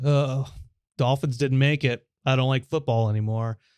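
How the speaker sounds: ordinary delivery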